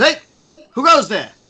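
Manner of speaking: shrill, very high and very loud screamed voice. Voicing a watchtower guard as the group approaches: screaming down at someone. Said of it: "you can hear one of them scream down".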